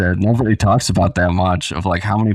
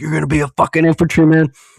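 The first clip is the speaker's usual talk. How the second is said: high-pitched, screaming drill-instructor voice; 8 semitones higher, 3 dB louder than usual. Retelling a drill instructor reacting to falling behind: imitating a drill instructor screaming. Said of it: "he just starts screaming in my face".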